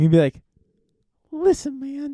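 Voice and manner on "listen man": pitched way up, cartoonish voice. Imitating what a nine-year-old version of him always says: voice like Mickey Mouse. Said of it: "He sounds like Mickey Mouse".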